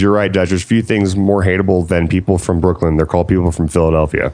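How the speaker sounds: usual speaking voice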